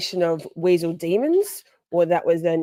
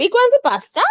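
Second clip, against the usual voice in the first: very high, raised pet-talk voice; 13 semitones higher, 5 dB louder than usual. Handing out pig's ears to the dogs Buster and Poppy, in a dog voice. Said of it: "My dog voice".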